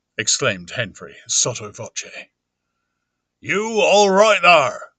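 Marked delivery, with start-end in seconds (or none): 3.4-4.8 sharp, raised, deliberate, pointed delivery. Reading a story aloud, a landlord calls through a door: asking sharply. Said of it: "asked Mister Hall sharply again".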